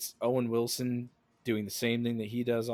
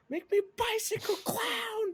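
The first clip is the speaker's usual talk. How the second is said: play-acted very high, drawn-out little kid's scream. Retelling a movie scene where a little kid screams: imitating a kid screaming. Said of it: "the little kid screams at him".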